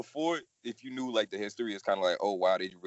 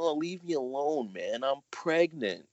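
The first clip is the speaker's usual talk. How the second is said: put-on raspy cartoon boy voice, drawn out slowly; 4 semitones higher, 4 dB quieter than usual. Retelling how the woman who voiced Bart answered people teasing her, in a Bart voice. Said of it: "I did it in a Bart voice".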